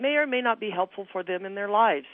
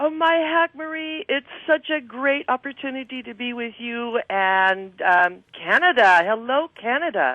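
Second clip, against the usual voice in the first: loud, thrilled, eager voice; 4 semitones higher, 6 dB louder than usual. Greeting the interviewer and canada at the start of the show: excited. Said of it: "You sound so excited".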